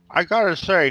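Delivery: talking with mouth full. Voicing a character eating cheese: talking with mouth full of cheese. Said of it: "he says with his mouth full of cheese".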